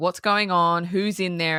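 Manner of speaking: ordinary delivery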